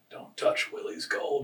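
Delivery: raspy, breathy whispered voice. Retelling a movie scene as Sean Astin: imitating Sean Astin's raspy voice. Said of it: "he kinda does it, like, with a raspy voice".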